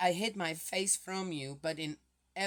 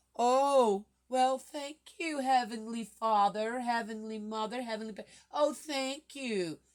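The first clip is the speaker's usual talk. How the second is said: high, sarcastic, mock-grateful tone; 6 semitones higher, 4 dB louder than usual. Answering a promise to be taken back, thanking Heavenly Father: sarcastic thanks. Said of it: "I'm being sarcastic here".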